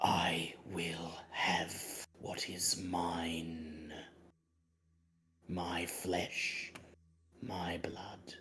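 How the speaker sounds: cold, level monotone whisper, mine drawn out. Game master voices a male voice whispering in a player's ear, cold, monotone whisper. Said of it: "a male voice, cold, monotone, whispers in your ear".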